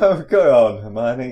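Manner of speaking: loud, slow, breathless laughing gasp. Collapsed with laughter while being hit with a pillow, gasping with laughter. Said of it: "Harry gasped, wiping his eyes".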